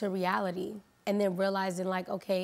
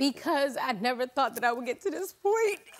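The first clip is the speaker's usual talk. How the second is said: high, teary voice talking through crying; 5 semitones higher, 4 dB louder than usual. Asked on Tamron Hall why they are crying, answering while crying. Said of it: "why are you crying?".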